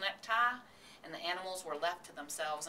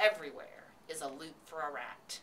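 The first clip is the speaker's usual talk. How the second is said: plain reading voice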